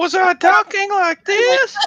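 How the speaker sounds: very high voice. Told they sounded different, the speaker checks by demonstrating: higher-pitched voice. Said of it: "voice sounded a little bit higher".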